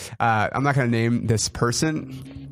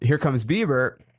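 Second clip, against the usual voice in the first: normal talking voice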